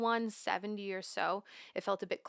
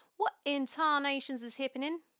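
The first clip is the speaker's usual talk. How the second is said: bad, high-pitched, fake put-on Australian accent; 5 semitones higher than usual. Complaining that the low end is not popping up, in a bad Australian accent. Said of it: "That was not a very good Australian accent".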